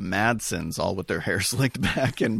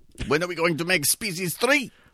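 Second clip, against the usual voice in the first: put-on German accent, pitched up, slightly goblin-like; 9 semitones higher than usual. Imitating H R Giger asking about a sequel: H R Giger impression, German accent. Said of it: "he's all German, so he's like".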